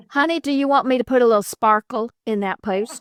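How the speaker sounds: put-on Southern US accent. Speaker who lives in the South voices how it talks, Southern accent. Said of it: "I'm sure it's got this this Southern accent".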